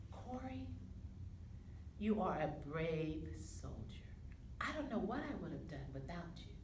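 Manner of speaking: soft, tender, hushed near-whisper.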